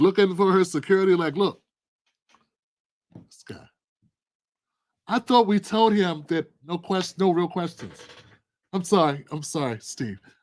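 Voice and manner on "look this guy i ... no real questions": put-on irritated, stumbling, pissed-off grumble. Retelling her glancing at the camera for security: imitating pissed-off Kamala Harris. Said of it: "she literally gets pissed".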